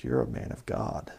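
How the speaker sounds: breathy, throaty, guttural whisper, crystal clear. Retelling a drunk neighbor suddenly speaking clearly: imitating a guttural voice. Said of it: "he had this guttural".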